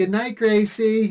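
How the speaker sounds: ditzy voice, a touch high-pitched. Retelling how the wife answered at the end of the show: imitating Gracie Burns playing the ditz. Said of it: "pretend to be the ditz".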